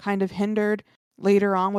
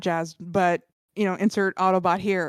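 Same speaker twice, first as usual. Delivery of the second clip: ordinary talk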